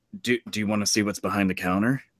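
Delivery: soft, secretive stage whisper. Imitating a clerk offering what's behind the counter: imitating a clerk half-whispering. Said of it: "they start whispering to you and be like".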